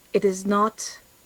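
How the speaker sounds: whispering. A player's character speaks to Rowan in a game, whispering. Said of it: "I will whisper to him".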